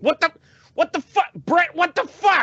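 very high-pitched, loud screaming.

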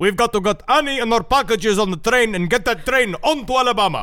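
clumsy, amateurish attempt at a Greek accent. Recalling his line from a play he did at sixteen, attempted Greek accent. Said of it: "Why do you sound like Prince Ali?".

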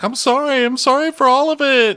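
mock very high, loud, tearful crying voice. Retelling a reality show scene, imitating someone crying as she apologizes. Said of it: "And she's crying, like".

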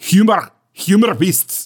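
Scottish-accented voice. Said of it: "sound good with a Scottish accent".

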